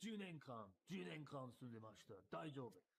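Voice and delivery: deep, terrifying, menacing low voice. Retelling what an actor said across the room: Ken Watanabe voice. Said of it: "the deep, booming, terrifying voice of Ken Watanabe".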